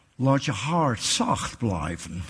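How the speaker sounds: put-on thick, heavy American accent, low pitch. Speaker quoting a female director from their Bible school: heavy American accent. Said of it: "met een zwaar Amerikaans accent".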